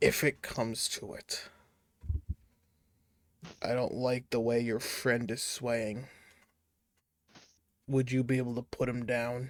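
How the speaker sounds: whispered voice. Pulling a character aside on a boat and whispering in his ear: whispering in character. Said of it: "just whisper in your ear".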